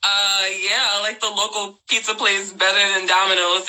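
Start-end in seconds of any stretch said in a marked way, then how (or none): none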